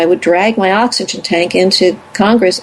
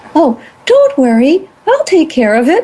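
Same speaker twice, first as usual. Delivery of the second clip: polished phone voice, pitched up, swooping; 8 semitones higher than usual. Retelling answering as if working at the place, in a best phone voice. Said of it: "I put on my very best phone voice".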